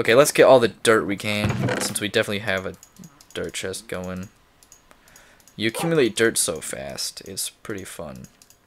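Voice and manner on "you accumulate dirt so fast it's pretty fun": obviously sarcastic, swooping sing-song tone. Gathering dirt in the game, the player comments, being sarcastic. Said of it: "That was being sarcastic".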